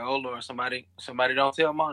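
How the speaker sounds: ordinary talk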